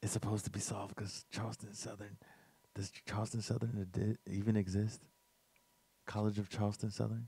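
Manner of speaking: hushed, barely audible. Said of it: "Nobody can hear you".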